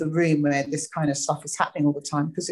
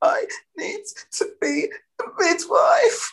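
mock very high, slow, halting, gasping stuttering stammer. Retelling own words to a manager after sobbing: imitating own stuttering gasp. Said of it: "stuttering gasp".

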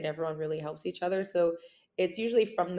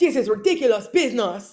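very loud, heated, fiery indignant outburst; 5 semitones higher, 11 dB louder than usual. Retelling own angry reaction to a bad situation: retelling own fiery outburst.

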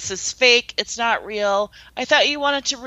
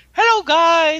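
put-on loud, bright, jolly and happy voice; 6 semitones higher, 6 dB louder than usual. Retelling how Joe popped out all happy: imitating Joe being happy. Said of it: "Joe was like all like happy".

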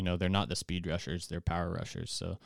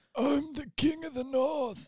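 put-on very high, old-sounding, breathless, out-of-breath dying voice. Hosts riffing on Game of Thrones while discussing the AFC North, Jon Snow deathbed voice. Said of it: "He sounded like he's on his deathbed".

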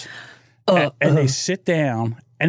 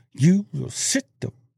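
mock talking through clenched teeth, higher pitch; 2 semitones higher than usual. Recalling how their mom scolded them in public, imitating mom talking through teeth. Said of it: "she would talk through her teeth".

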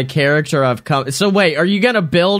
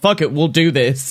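ordinary talk, nothing marked

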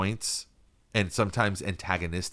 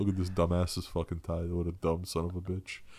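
acted, mock-snide, dry delivery; 2 semitones lower, 4 dB quieter than usual. Acting out what a man mouthed to the senator next to him, imitating a snide, dry aside. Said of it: "he's just like kind of taking little snide shots".

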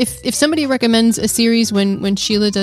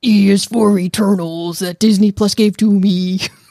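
slow, drawn-out puppet monster voice. Doing a requested voice for the summary intro: Cookie Monster voice. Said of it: "That's Cookie Monster".

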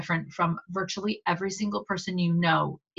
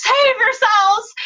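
very high, loud shrieking shout; 9 dB louder than usual. Retelling a shout at the closing elevator doors: imitating Hannah shouting. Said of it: "Hannah shouts".

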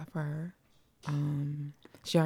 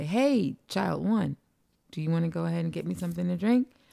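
put-on sarcastic tone, louder; 5 dB louder than usual. Retelling what they say to an unresponsive child: retelling a sarcastic request. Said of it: "as the sarcastic people we are".

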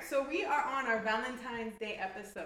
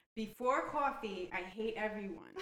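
usual speaking voice

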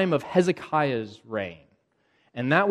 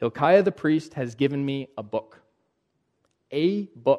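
ordinary talk

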